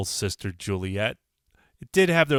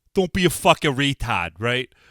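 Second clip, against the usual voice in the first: fake, badly done South Boston accent; 3 dB louder than usual. Host greeting South Boston listeners before a story, in a bad put-on Southie accent. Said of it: "I love the Southie accent".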